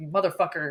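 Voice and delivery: put-on angry voice. Retelling a film scene where Brad reacts: imitating Brad pissed off. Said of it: "Brad's fucking pissed".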